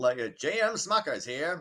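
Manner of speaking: old-time 1940s cartoon character voice. Reading a news item, the speaker says a company name in a 1940s cartoon voice. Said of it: "you're back to that same voice".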